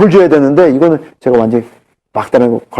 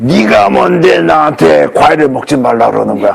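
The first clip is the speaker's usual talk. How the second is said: rough, creaky monster voice. Retelling what a cancer patient said back to the speaker, in a monster voice. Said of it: "목소리가 변해. 괴물 목소리로".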